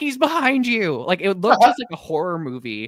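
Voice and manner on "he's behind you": very high, panicked, alarmed scream. Recalling a scary scene on television, reenacting screaming at the screen. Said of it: "I literally screamed at my television".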